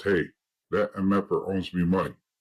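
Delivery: normal talking voice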